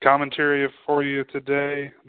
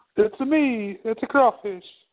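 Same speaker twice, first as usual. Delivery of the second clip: put-on Italian accent in a much higher pitch; 10 semitones higher than usual. Both speakers agree to do Italian voices; this one does Mario Italian. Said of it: "Let's just both do Italian".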